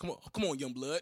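put-on tough old gangster voice. Acting out how old gangsters talk to the young, imitating a gangster old-timer.

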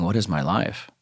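play-acted broken-down, despairing sobbing cry. Recalling sitting in the street after a huge fight, acting out sobbing. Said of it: "I just sobbed going".

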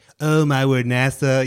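very slow delivery, every word drawn out. Acting out a phone call from NASA: imitating Trump. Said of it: "And he's like".

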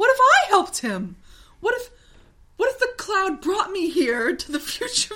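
laughing through the words. Recounting a character's line, laughing through the words. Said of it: "I can't even fucking say this without laughing".

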